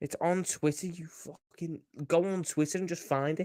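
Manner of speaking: irritated, fed-up, angry, slow, exasperated outburst. Answering a request to send a news link: angry. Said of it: "why are you so angry for?".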